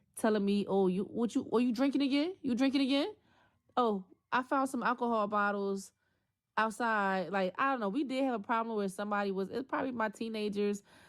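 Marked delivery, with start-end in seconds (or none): 0.7-7.4 jeering, accusing, needling mocking taunt. Retelling being accused of drinking again: imitating a mocking taunt. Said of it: "mocking me, mocking my sobriety".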